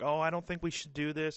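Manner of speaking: put-on shrinking, timid and meek voice. Retelling how a character hesitated the day before: imitating a timid voice. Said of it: "was all timid and like".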